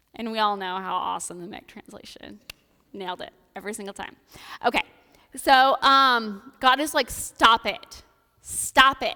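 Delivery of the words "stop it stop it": loud yelling dad voice, louder and much slower. Retelling a Bible story, voicing God in a loud dad voice. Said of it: "he's got dad voice".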